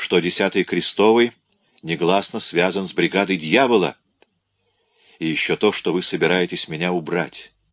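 ordinary delivery

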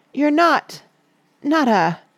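high, trembling, unsteady voice. She asks a question in a shaky voice, unable to say the final word. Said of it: "asked Susan in a shaky voice".

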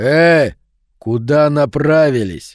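sinister, ominous, menacing, threatening tone. The bull turns and questions Mark and the others trying to slip away; ominous. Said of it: "спросил он зловеще".

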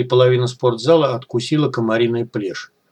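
ordinary talk

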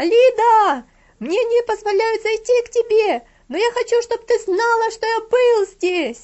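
very high, full-strength yell. Sent down the steps, he calls out to the girl, shouting with all his might. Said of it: "изо всех сил закричал".

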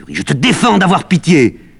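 very loud, high, shrill, raging fury. Medea rises up before Jason, furious. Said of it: "Médée se dresse devant lui comme une furie".

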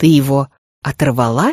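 very low, incredulous, disbelieving voice. Narrating a story, Pride questions Jeanne with an incredulous question. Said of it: "недоверчиво спросил Прайд".

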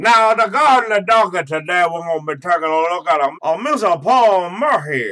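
loud, high-pitched cartoon rooster voice. Imagining how a small-town figure would sound: Foghorn Leghorn voice. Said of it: "I just imagine him sounding like".

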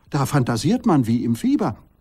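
plain

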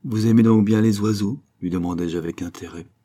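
plain reading voice

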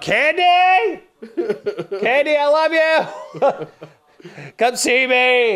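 mock very high, very slow, drawn-out scream. Retelling chasing a goat through Macy's, the speaker re-enacts screaming out to someone. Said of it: "I'm screaming out".

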